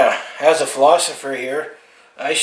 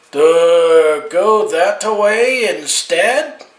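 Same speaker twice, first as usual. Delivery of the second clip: loud, very slow put-on French accent, "duh" stretched; 4 semitones higher, 5 dB louder than usual. Joking about what the french say for detour: french accent speaking english. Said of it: "best French accent talking English".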